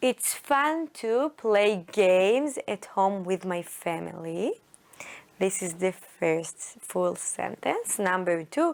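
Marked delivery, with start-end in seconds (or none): none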